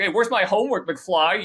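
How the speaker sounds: loud, high-pitched voice. Acting out a scene from a movie: imitating Biff. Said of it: "it's just like Biff and George McFly, he's just like".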